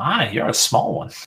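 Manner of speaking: put-on aged fairy character voice. Voicing the old Whitefire Arcanist greeting a small visitor: old fairy arcanist voice. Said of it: "she kind of looks at you and she says".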